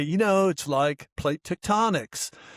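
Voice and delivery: easygoing, laid-back beach surfer dude voice. Recounting answering someone's question earlier today, in a surfer dude voice. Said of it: "in my best sort of surfer dude voice".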